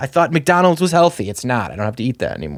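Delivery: ordinary delivery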